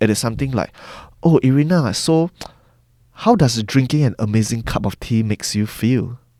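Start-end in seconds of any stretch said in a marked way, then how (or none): 1.2-6.2 warm, open, empathetic, genuinely interested, non-authoritative. Showing a non-authoritative way to ask someone a question: warm, open tone. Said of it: "we speak with an empathetic tone".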